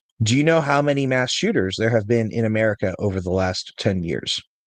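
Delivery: plain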